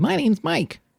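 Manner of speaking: whiny little voice, very high-pitched. Showing how his own intro can sound: imitating his own high-pitched voice. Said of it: "if that's kinda too high-pitched".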